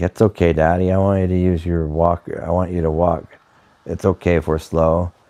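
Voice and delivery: ordinary talk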